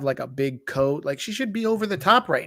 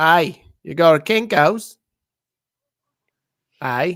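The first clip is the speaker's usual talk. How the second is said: terrible put-on Australian accent, loud and slow; 2 semitones higher, 7 dB louder than usual. Riffing on Kinko's sounding Australian, in a bad Australian accent. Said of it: "that is the worst Australian accent I've ever heard".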